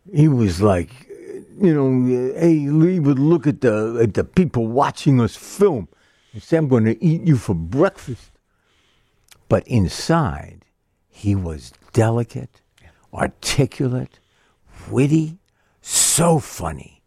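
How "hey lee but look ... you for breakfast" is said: put-on scary guy voice, side of mouth, higher. Retelling meeting a scary guy on a film set: Sylvester Stallone voice, out of side of mouth. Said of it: "talked out of the side of his mouth".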